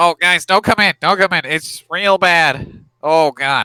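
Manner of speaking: talking through a held, pinched nose. Retelling a man on a chair warning the others not to come in, imitating talking while holding nose. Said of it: "is just holding his nose".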